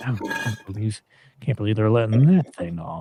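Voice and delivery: hushed, quiet whisper. Voicing well-dressed train passengers reacting to a dirty traveler: whispering passengers. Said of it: "you even hear, you know, whispering".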